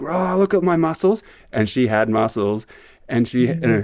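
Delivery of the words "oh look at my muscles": mock boastful show-off tone, very high. Retelling a surfer coming out of a wave flexing: imitating a surfer flexing proudly. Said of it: "with her arms up like this, like in a flexing".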